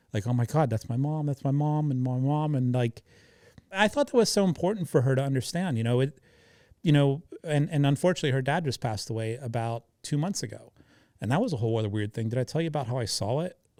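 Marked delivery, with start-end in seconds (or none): 0.2-2.5 acted tearful bawling, words through sobs. Retelling how she recognized her mom's voice: imitating someone crying. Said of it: "just instantly started crying, bawling".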